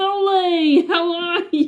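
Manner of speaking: put-on Bronx accent, very high, drawn-out. Retelling how granddad's cousin greeted them on every call, imitating a Bronx-style accent. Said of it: "this little Bronx mouse".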